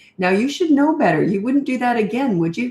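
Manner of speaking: patronizing, condescending, talking-down voice. Showing how parents talk to their kids, patronizing, condescending voice. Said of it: "See that patronizing, condescending voice?".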